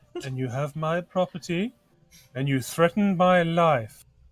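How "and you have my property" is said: ordinary delivery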